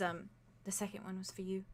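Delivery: very soft, hushed, confiding voice. A character mid-hug with a player's character, answering very softly. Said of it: "she very softly just says".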